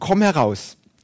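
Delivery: loud calling out.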